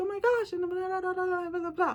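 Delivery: very high, loud, bubbly, gushing voice.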